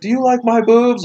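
intoxicated-sounding speech.

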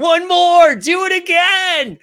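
very high, shrill, drawn-out yell. Retelling what a photographer friend screamed during the photos, retelling a scream. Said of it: "starts screaming".

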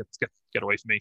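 put-on frustrated, annoyed dismissive tone. Retelling a wrestler shrugging off his partner: imitating a frustrated brush-off. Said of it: "shrugs him off".

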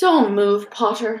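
unhurried, idle, lazy, languid drawl. Reading a character's line to another as the crowd backs away, lazily. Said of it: "said Snape lazily".

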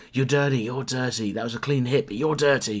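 angry yelling, loud and high-pitched.

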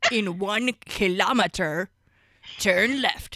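loud, gravelly muppet-style cartoon monster voice. Imitating Waze navigation set to the Cookie Monster voice. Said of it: "use Waze with the Cookie Monster voice".

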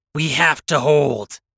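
short, sharp, cutting, snapped delivery. A mech pilot in combat radios the lance, snapping. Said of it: "I snapped".

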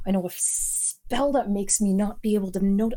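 put-on mumble under breath. Retelling what she said looking in the mirror, imitating muttering under breath. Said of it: "she's like muttering under her breath".

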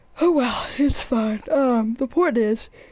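slow, words stretched by yawning. Chatting late at night about the Fortnite storyline, yawning. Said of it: "I'm sorry, I'm yawning".

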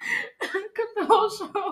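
loud, high-pitched laughter.

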